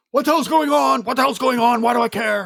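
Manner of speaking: exasperated, fed-up tone. Telling how the entire movie frustrated you, do a frustrated Nicolas Cage impression. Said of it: "I'm Nicolas Caging the movie going".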